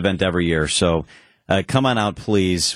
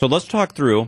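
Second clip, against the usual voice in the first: talking with mouth full, much higher pitch; 5 semitones higher than usual. Tasting the pasta dish on camera, talking with mouth full. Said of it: "my mouth's full".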